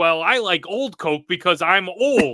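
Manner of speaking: loud, punchy radio commercial announcer voice. Quoting a radio commercial heard in a movie: Adam Sandler voice. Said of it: "it's Adam Sandler's voice".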